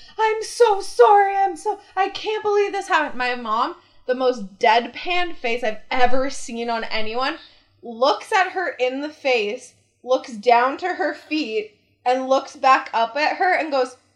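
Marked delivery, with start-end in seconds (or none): 0.2-3.2 high, tearful, sobbing, weepy crying voice. Retelling the teacher's apology to the speaker's mom, imitating the teacher crying.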